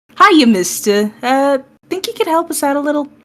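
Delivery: sugary, honeyed voice, pitched high. Voicing Nova asking a guy for help: honey and sweetness in his voice. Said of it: "all the fucking, just honey and sweetness in his voice".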